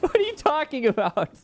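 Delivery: high laughing, disbelieving.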